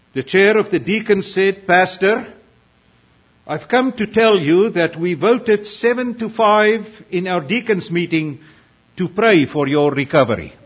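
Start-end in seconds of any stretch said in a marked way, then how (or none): 1.6-10.4 sternly delivered, severe tone. Telling a joke, the deacon chair addresses the sick pastor: mock-stern voice. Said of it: "with a stern voice".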